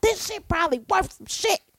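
high, frustrated, angry shouting. Retelling going downstairs for dog-ruined Beanie Babies: retelling own screaming. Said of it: "I was down there screaming".

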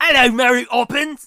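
high-pitched, very loud, belted out. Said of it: "You hear him in Mary Poppins and he's like".

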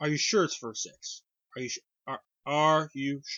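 needling, provoking, snippy tone full of attitude. Retelling how she questioned someone, the speaker acts out her mock-snippy attitude. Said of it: "You can tell by my tone".

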